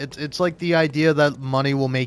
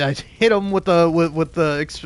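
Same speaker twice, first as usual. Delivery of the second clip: normal talking voice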